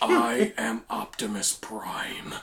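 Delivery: soft, hushed, breathy whispering character voice. Two hosts compare impressions; one gives his take in Optimus Prime voice. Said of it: "Which one sounds more like Peter Cullen?".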